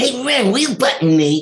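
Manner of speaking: squeaky, very high, loud put-on cartoon voice. Recalling a job, the speaker performs a line calling to ren: put-on character voice. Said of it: "both voices".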